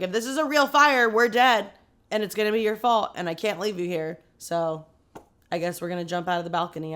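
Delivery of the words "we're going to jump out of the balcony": ordinary talk, nothing marked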